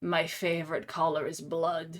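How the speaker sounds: mock very ominous, dark, low voice. Retelling what she said looking at Althea, put-on ominous voice. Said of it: "in this very ominous voice".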